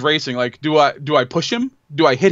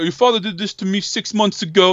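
put-on, mocking New York accent; 4 semitones higher than usual. Speaker quoting a man who kept bringing up their father, put-on New York accent. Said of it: "he's trying to talk like a New Yorker".

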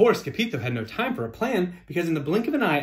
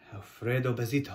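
whisper, much quieter, lower pitch; 3 semitones lower, 7 dB quieter than usual. Narrator reading the crowd's line as a hush falls, whispered. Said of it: "whispered the crowd".

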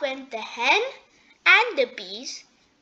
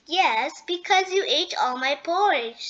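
ordinary delivery, nothing marked

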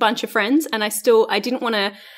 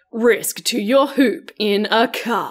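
put-on serious voice, solemn tone. Announcing the next topic to a co-host, mock serious voice. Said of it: "Let's get serious voice".

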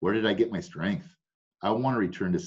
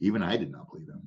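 ordinary delivery

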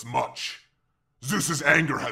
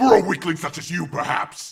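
loud, high, menacing snarl; 5 semitones higher, 5 dB louder than usual. Narrator reads a voice retorting to a servant, snarling. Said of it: "the voice snarled".

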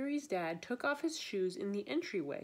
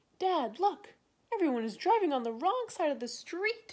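raised, pitched-up exclaiming, calling out; 8 semitones higher, 6 dB louder than usual. A boy just arrived in Japan calls out to his dad: exclaiming. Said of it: "exclaimed Gregory".

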